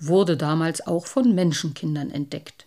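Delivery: ordinary delivery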